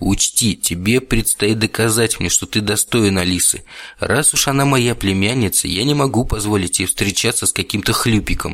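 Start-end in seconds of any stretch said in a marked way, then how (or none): none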